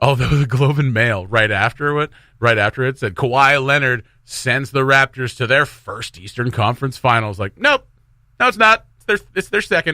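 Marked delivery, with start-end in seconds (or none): none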